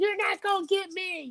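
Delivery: tiny, very high, soft squeaky voice. Speaker pitching an idea for a video, in a little squeaky voice. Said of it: "with like a little squeaky voice".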